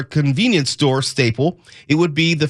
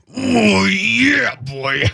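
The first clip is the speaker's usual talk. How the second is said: strained, higher-pitched voice; 6 semitones higher than usual. Introducing Randy Savage, the speaker does a straining Randy Savage impression. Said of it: "you sound like you're on the toilet when you do it".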